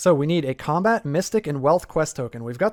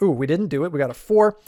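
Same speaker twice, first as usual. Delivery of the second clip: ordinary delivery, nothing marked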